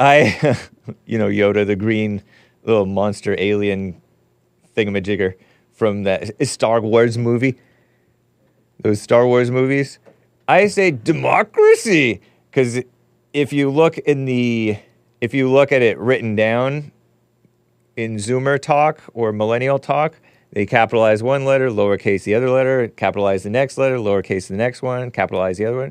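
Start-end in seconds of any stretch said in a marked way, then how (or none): 10.9-12.2 higher, drawn-out sarcastic mocking, sneering the word "democracy". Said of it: "meant to be said sarcastically and mockingly".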